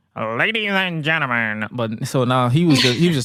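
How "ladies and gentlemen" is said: put-on penguin character voice. Recalling a wrestling announcement, saying ladies and gentlemen in a Paul Heyman penguin voice. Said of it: "with the penguin voice".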